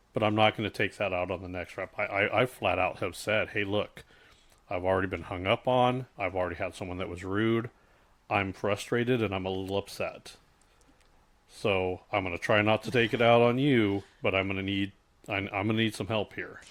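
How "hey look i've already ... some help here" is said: usual speaking voice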